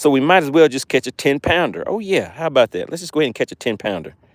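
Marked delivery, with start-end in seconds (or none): none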